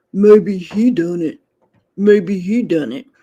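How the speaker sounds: deep voice. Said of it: "I read, you know, [name]'s text and stuff back in his voice".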